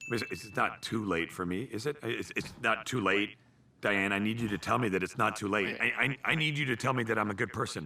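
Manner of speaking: stammering, stuttering, desperate, crumbling voice. A character pleads with someone, stuttering and begging. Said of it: "The stuttering and devolvement into begging".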